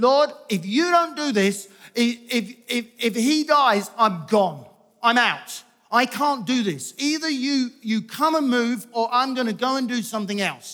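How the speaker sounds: loud, cross, demanding mock angry yelling. Speaker reenacts yelling at God while driving to the hospital, retelling a yell. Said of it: "I'm like yelling at God in the car".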